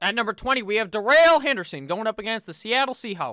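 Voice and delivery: loud, joking, put-on Western accent. Ranking running backs, the speaker announces the next pick in a joking western accent. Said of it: "I gave Darrell Henderson a uh, Western accent".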